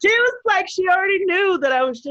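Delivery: high, loud, overflowing excitement. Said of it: "like, brimming".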